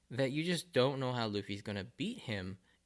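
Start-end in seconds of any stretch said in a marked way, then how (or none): none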